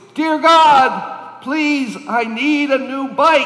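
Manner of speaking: very loud, high, shrill shouting. Retelling a younger boy praying at his grandmother's house, imitating a loud shouted prayer. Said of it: "prayed out in his loudest voice".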